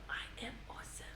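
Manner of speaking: soft, quiet whisper.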